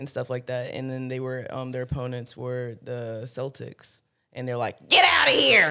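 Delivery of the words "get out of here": very high, very loud, shrill caricature voice. Quoting the Lakers' opponents, the Celtics, in a racist caricature voice. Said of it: "That's my racist voice".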